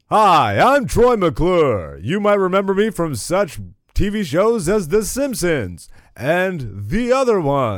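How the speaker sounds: high, sing-song cartoon voice, drawn out, swooping pitch. Trying out another Simpsons character voice: Troy McClure voice. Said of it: "What other characters can I do?".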